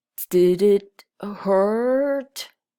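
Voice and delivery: muffled, slow drawl. Narrating a story, a character hiding in his shell asks a question: Dozzer's muffled drawl. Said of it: "A muffled voice came from the shell".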